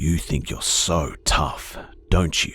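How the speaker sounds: very deep, hoarse, calm, slow drawl. A man in an elevator addressing the narrator, very deep, hoarse, slow, calm. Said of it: "in a very deep, hoarse voice, he said slowly and calmly".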